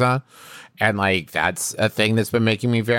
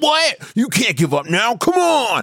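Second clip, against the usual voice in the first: mock, very high, pushy, shrill yelling; 13 semitones higher than usual. Retelling how a man nearby yelled at the woman he worked with: imitating yelling. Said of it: "this dude who was like yelling at her".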